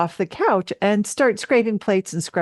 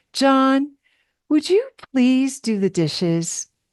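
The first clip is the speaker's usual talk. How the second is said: fake sugary, sweet, gentle tone; 4 semitones higher than usual. Retelling asking john to do the dishes while seething, put-on sweet tone. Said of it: "See how sweet?".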